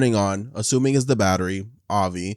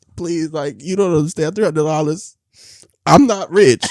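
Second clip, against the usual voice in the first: put-on crying, high-pitched, tearful and begging; 6 semitones higher, 4 dB louder than usual. Retelling pleading with the bank lady on the phone, reenacting a crying plea. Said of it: "crying on the with the phone at the lady".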